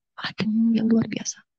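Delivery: slow, soft, awed whisper.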